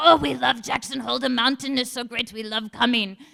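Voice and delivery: put-on Italian accent. Retelling what an Italian man told him, Italian accent. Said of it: "great Italian accent".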